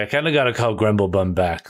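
ordinary talk, nothing marked

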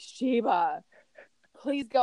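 mock-tearful pleading, crying tone. Retelling begging the burro sheba to keep walking; retelling a crying plea. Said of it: "I'm like crying".

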